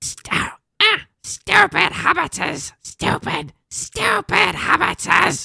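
breathy whispered mutter. Showing the others a Gollum voice after talking about warm-ups: Gollum voice. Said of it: "I was getting kinda close to Gollum".

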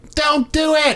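put-on small boy shout. Retelling shouting out during a quiet moment in a theater, tiny little boy voice. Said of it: "I just yelled out my tiny little boy voice".

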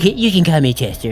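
creepy, sleazy put-on creep voice. Chatting with friends, suddenly doing a creepy predator voice. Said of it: "See, there it is right there".

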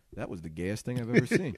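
bone-dry, understated deadpan, quick and tossed off. Speaker retells a friend's reply after someone slams the door, retelling a dry deadpan line. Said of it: "the dryness of Brendan's line".

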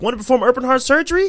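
mock announcer voice, high-pitched.

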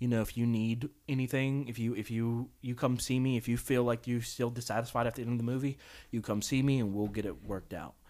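whispering. Retelling what a manager said to a moviegoer: imitating a whisper. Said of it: "he whispers to the guy".

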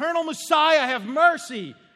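desperate, high, loud screaming.

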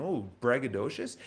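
ordinary talk, nothing marked

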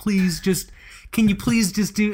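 put-on, high-pitched, begging, pleading voice. Retelling how he asks his cats to pose: imitating himself pleading.

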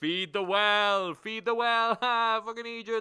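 shrill, very high, very loud jeering taunts. Voicing townsfolk on a pub porch jeering at the adventurers: jeering crowd. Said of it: "they all, like, jeering at you".

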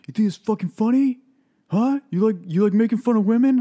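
very high, very loud, furious yelling. Retelling a driver who pulled up beside them: imitating a man yelling. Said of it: "yelling at me".

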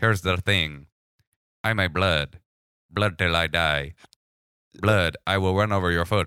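put-on synthesized machine-like voice drifting into Eastern European accent. Doing a comedy bit as a gang member: Stephen Hawking voice. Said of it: "Okay, Stephen Hawking".

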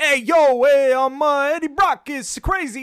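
put-on overdone movie Brooklyn accent, shrill, high and booming. Mocking a character's accent, doing Eddie Brock's unnecessary movie Brooklyn accent. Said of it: "an unnecessary Brooklyn accent".

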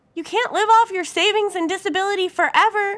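loud, very high, beseeching pleading tone. A mother urges her daughter to start working eventually, pleading. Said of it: "Mom pleaded".

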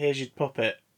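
ordinary delivery

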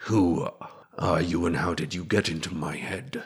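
muttered under breath. Narrating a man alone outside, away from his men, muttering under his breath. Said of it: "he kind of mutters under his breath".

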